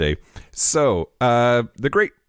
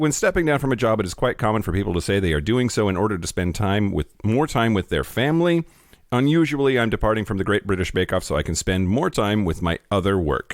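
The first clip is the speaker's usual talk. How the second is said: ordinary talk, nothing marked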